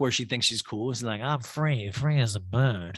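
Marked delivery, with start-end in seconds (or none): 1.2-3.0 put-on drunk woman voice, much slower. Retelling how Erica acted while totally drunk, imitating drunk Erica. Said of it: "She's just totally drunk".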